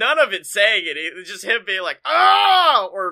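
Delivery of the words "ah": high, loud scream. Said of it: "videos of him screaming".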